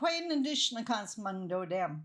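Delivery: ordinary delivery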